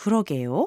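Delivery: rising, question-like tune at the end of 그러게요. Korean lesson on a response that sounds like a question: question-like rise at end of 그러게요. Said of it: "may resemble that of a question with a rise at the end, like".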